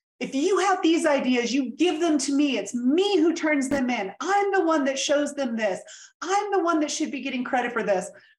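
mock heated, furious, demanding rant. Retelling how the direct boss reacted to the ideas: imitating boss yelling at top of lungs. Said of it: "she stood up and yelled at the top of her lungs".

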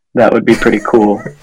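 ordinary talk

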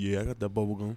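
slick, suave, smooth, easygoing cool-guy voice. Storyteller quoting Kevin's reply back in the car, in Kevin's suave voice. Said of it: "I don't know why I gave you the suave voice".

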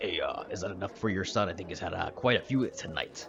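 quiet, low half-orc voice. Narrator speaking to players voices Grog, the half-orc man at the Sleeping Stag. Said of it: "[name] is actually a half-orc man that works at the [name]. / [name] is actually a half-orc man that works at the [name]. / So the bartender walks away".

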